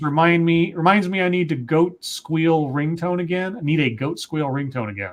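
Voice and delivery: ordinary talk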